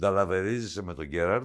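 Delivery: normal talking voice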